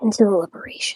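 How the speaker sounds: whispering. Telling another character how the people were taken, whispering. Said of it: "I'm gonna whisper this part".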